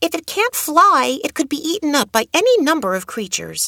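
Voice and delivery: very high, eager, insistent voice. A child argues with another child over an injured crow, eagerly. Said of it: "continued Adoet eagerly".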